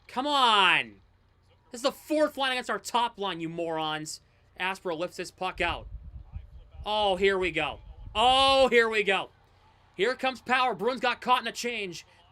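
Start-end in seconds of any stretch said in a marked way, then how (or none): 0.2-4.2 worked-up, really agitated ranting outburst. Calling a hockey game, complaining about the line matchup: really agitated. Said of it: "Now I'm getting really agitated".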